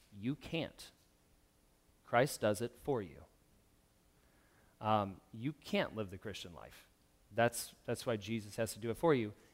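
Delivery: soft, gentle, quiet and kind tone. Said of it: "he just quietly and kindly says".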